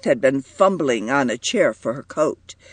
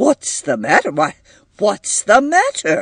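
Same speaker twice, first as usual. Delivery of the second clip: worried, urgent, anxious high-pitched cry; 6 semitones higher, 4 dB louder than usual. John walks in and Edith flees to him wildly; anxious. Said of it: "walked anxiously in".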